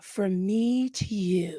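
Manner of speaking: soft, eerie, very slow voice, "you" drawn out. Recounting a voice heard through the pillow: imitating a creepy voice. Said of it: "something like a creepy voice saying".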